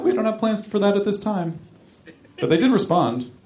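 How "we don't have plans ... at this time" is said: put-on voice, much higher-pitched. Retelling a company's reply to a customer's emailed request, in a high-pitched voice. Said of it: "In a high-pitched voice".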